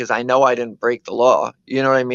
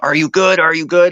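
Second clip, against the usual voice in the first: shouted, aggressive, in-your-face screaming; 4 semitones higher, 3 dB louder than usual. Retelling how a driver jumped out and ran over: imitating a driver screaming. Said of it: "starts screaming".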